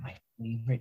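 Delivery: quiet aside. Recalling unused film footage where he pours a drink: retelling a quiet remark to himself. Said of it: "He just says it quietly to himself".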